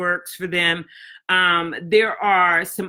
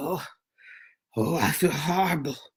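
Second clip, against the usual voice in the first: put-on deep, sick-sounding voice; 4 semitones lower, 5 dB quieter than usual. Retelling a call from a man home with allergies, imitating a deep sick voice. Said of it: "calling me with a deep breath, uh, deep voice".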